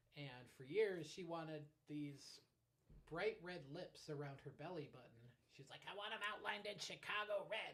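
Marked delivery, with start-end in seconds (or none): 5.9-7.8 imitated New York accent. Imitating mom, who is from new york: imitating mom's new york accent. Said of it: "my mom's from New York. She talks like this".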